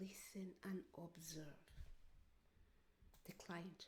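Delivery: soft, unvoiced whisper.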